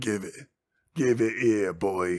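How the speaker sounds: put-on loud, skeevy, sleazy, grimy orc voice with an accent. Retelling a scene where an orc demands something from a boy: grimy, skeevy orc voice. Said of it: "just like grimy and skeevy".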